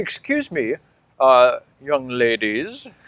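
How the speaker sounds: foppish, preening dandy voice. Describing how a fashionable man talks, the speaker imitates him in a foppish dandy voice. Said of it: "that's actually how he talks".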